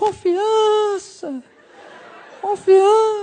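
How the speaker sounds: very high, otherworldly, cinematic echoing voice. Retelling a voice that came from beyond like in the movies: echoing voice from beyond. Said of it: "com a voz com eco e tudo".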